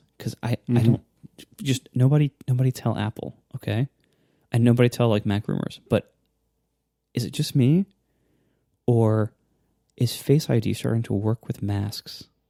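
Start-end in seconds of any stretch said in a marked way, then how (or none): 1.6-12.3 hushed, secretive whisper. A show host confiding something to the audience, whispering. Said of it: "I kind of have to whisper this".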